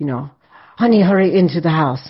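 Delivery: put-on heavy, laid-on Eastern European accent. Retelling a woman ushering the speaker into her house, thick Eastern European accent. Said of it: "a very thick European, Eastern European accent".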